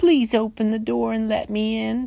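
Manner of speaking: sugary, sweet little voice, small and high. Reading the story aloud, voicing the Big Bad Wolf at the pig's door, sweet little voice. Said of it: "said the big bad wolf in a sweet little voice".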